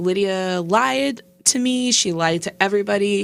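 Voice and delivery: plain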